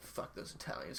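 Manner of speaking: put-on bitter, whispered old-school grumble. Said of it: "He's like".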